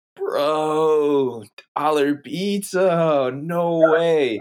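put-on very slow high scream, "bro" stretched out. Recounting what a man was screaming while people stared at them, retelling a scream. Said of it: "But he's like screaming it".

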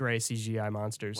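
plain

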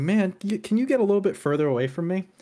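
playful mock-serious jokey tone. Retelling a remark to a fellow player during a game: retelling a joking request. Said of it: "I said to Oreo jokingly".

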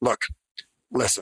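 clear pause after "look," before "listen". Showing how a pause catches eyes and ears: clear pause between look and listen. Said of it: "Hear my pause".

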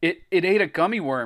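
stammered words. Greg, after seeing the blob suck up a gummy worm, stammering. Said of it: "Greg stammered".

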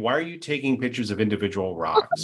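put-on laughing voice. Speaker retelling their wife laughing at them, imitating someone laughing. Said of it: "just like laughing at me going".

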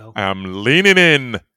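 very loud voice blasting close on the mic. Told not to lean in to the mic, lean in anyway: close to mic. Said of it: "Don't, it hurts and it'll go red".

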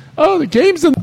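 high, whiny announcer voice. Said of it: "whiny E S P N announcers who goes".

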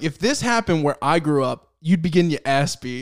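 ordinary delivery

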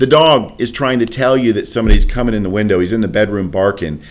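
ordinary talk

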